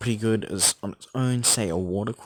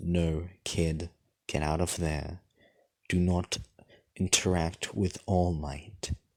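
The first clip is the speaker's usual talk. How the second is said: deep, slow, weighty lower character voice; 3 semitones lower than usual. Playing Zuko speaking into the wood, Zuko's deeper voice. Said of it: "he says into the wood in his deeper voice".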